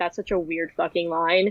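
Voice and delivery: ordinary talk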